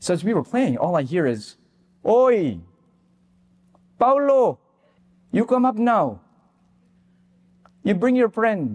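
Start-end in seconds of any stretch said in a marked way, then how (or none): 2.1-8.8 put-on strong Filipino accent. Retelling how a friend's mom called them upstairs, strong Filipino accent. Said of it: "strong Filipino accent".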